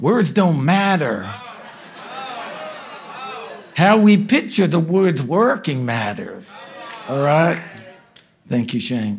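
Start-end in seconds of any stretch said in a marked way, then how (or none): 0.0-6.5 put-on attempted American accent. Quoting a friend's saying about worship: imitating Shane Willard's American accent. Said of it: "I'll try and say it with that American accent".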